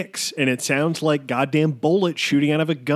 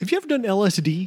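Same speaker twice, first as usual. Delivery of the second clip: pitched-up, chill stoned podcast bro voice; 5 semitones higher than usual. Imitating a podcaster asking a guest a question: imitating Joe Rogan. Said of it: "You'd be like".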